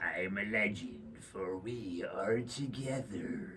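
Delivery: eerie, creepy, hushed and very quiet. A co-host asks for a creepy voice; saying the phrase in a creepy voice. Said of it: "give me your creepy voice".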